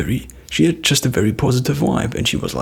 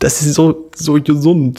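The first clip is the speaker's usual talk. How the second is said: put-on German accent, higher and louder; 4 semitones higher, 5 dB louder than usual. Retelling what she said in german, with a german accent. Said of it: "So it was like um, a German accent".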